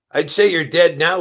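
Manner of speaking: loud, high-pitched, snide sneering jeer. A narrator reads a gunman's line, pistol to a man's forehead, sneered. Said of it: "he sneered".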